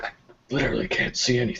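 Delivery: barely voiced, soft, breathy whisper. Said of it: "he whispers".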